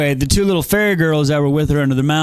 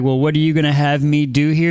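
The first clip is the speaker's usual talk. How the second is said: put-on angry voice. Retelling a book character's line: imitating Feyre mad and angry. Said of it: "when she's all mad and angry".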